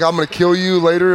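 ordinary talk, nothing marked

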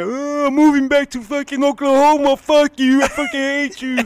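acted, very high, loud, sobbing crying outburst. Retelling how a younger brother left after being hit: imitating Pedro crying. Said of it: "And he starts crying".

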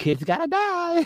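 very high, sweet kindergarten-teacher tone. Retelling a character who is not even mean about it: sweet kindergarten teacher voice. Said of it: "got this sweet kindergarten teacher voice".

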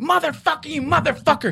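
acted, very high-pitched, shrill, furious screaming. Retelling a man screaming into their car, imitating someone screaming. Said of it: "He's screaming at us".

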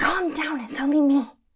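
hushed whisper. Answering someone who warns they are armed, whispering. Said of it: "there's no need to whisper".

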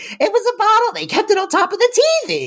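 very high defensive delivery, pitch swooping widely. Quoting a sitcom line the way Renee Taylor delivers it: imitating Renee Taylor's defensive delivery. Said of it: "Renee Taylor gets so defensive".

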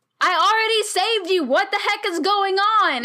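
put-on yell, high, loud, exasperated.

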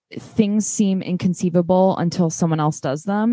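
ordinary talk

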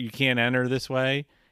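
ordinary delivery

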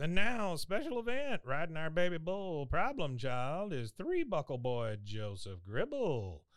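slow, swooping rodeo announcer voice. Retelling a bull-riding event, imitating the announcer: bull-riding announcer voice. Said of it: "The announcer comes on and goes".

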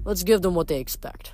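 plain reading voice

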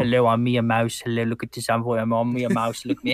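deliberately bad character voice. Imitating the weak voice auditions being received: mocking a bad voice audition.

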